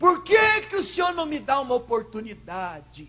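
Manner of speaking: loud, high indignant tone.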